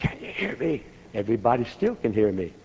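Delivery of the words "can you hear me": soft, breathy, barely voiced whisper. Retelling testing whether the group down the hill can hear him, whispering. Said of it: "Then I whisper".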